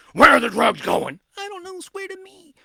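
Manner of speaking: high, loud shout, clumsily delivered. Speaker quoting a Batman movie scene, in a bad Batman impression. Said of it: "that's a bad impression".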